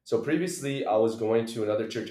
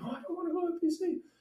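put-on very high, hushed, tearful voice through sobs; 6 dB quieter than usual. Retelling answering their dad's yelling about church, imitating own past crying. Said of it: "I was like crying".

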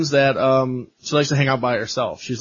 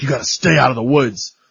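put-on angry mean voice, louder; 4 dB louder than usual. Retelling a movie scene, quoting Aunt Marta: imitating Aunt Marta being mad and mean. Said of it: "She's so fucking mad and so mean".

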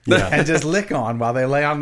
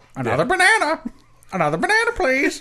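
squeaky, very high, swooping sing-song monkey voice; 12 semitones higher than usual. Speaker plays a monkey in a role-play: monkey voice. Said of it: "His monkeys talk like that".

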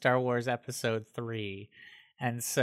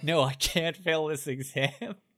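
mock-repentant, higher-pitched begging tone; 5 semitones higher than usual. Speaker retells a student told he would fail the exam, retelling a repentant plea. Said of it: "got so repentant".

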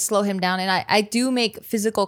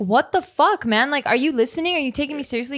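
put-on, fed-up, disbelieving, exasperated, pitched-up outburst; 5 semitones higher than usual. Speaker re-enacts calling someone out for not listening: retelling own frustrated outburst. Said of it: "And I'm just like".

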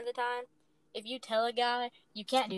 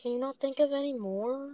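mock downcast, defeated, glum, depressed. A co-host mimics how another co-host just answered: mock-depressed tone. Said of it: "You said that so depressed".

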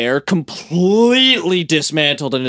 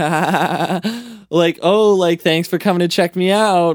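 mock laughter while talking, much slower pace; 3 semitones higher than usual. Speaker retells a woman talking to people at her car, imitating someone laughing while talking. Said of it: "She's like laughing and being like".

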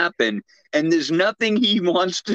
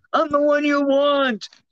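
put-on screaming, higher; 8 semitones higher than usual. Retelling a film scene where she is abducted: imitating someone screaming out. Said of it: "listening to her scream out".

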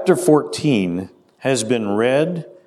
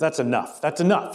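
mock-irritated man's voice, acted irritated outburst; 2 semitones higher, 4 dB quieter than usual. Telling a story, voicing the atheist fed up with a woman's praying, mock-irritated man. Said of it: "this atheist got so irritated by it".

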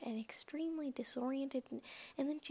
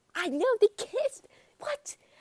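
put-on very loud, high, stunned burst of shock; 9 semitones higher, 13 dB louder than usual. Telling listeners about seeing Kathy and Benny kiss: shocked. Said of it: "can hear the shock in my voice".

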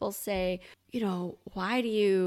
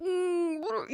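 mock very high, muffled mouth-full mumble; 10 semitones higher than usual. Retelling sitting with a sip held in the mouth: imitating talking with mouth full. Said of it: "sitting there with my mouth, like, full of Doctor Pepper".

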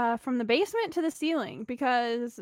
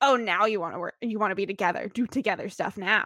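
biting, snarky, sarcastic, sniping tone; 4 semitones lower than usual. Retelling a TV character's remark to a partner: imitating a snarky remark. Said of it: "so snarky. She's like".

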